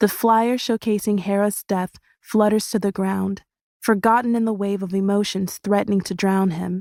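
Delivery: plain reading voice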